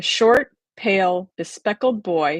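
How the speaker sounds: ordinary delivery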